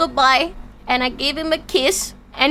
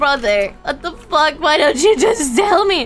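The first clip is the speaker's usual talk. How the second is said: put-on crying, emotional tearful outburst. Retelling the moment of asking why he never said it: imitating own past crying. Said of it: "I actually cried. I was like".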